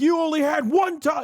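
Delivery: acted, frustrated, furious shouting, high-pitched. Recapping a match, retelling Logan Paul yelling after his friend lost. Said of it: "he starts yelling like".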